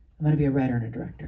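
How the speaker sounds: put-on fast, rattled-off delivery in a kid voice.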